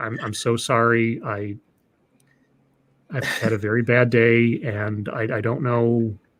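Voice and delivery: low, hushed, embarrassed, stumbling, ashamed. Act out the embarrassed guy who came back in the store, imitating a quiet, embarrassed apology. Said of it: "his voice had gone down about seventeen decibels".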